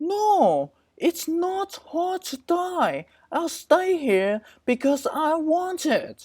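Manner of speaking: very high, goofy, silly goose voice. Narrator acting out a conversation with a goose, goose voice. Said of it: "Sorry about the voice. That's how a goose speak in my head".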